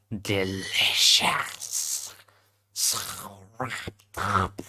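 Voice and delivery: very slow, drawn-out, whispered spider voice. Voicing a female spider character, spider-like voice. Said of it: "let me just think of a spider-like voice".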